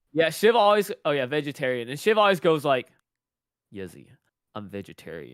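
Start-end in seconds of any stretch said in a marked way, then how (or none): 3.7-5.3 soft, deep, hushed disappointed voice. Retelling how Shiv answers when the speaker forgets: imitating Shiv's disappointed voice. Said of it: "He's like just a point like a disappointed voice".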